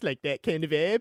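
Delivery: put-on cartoon kid voice. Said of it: "he kinda talks like this".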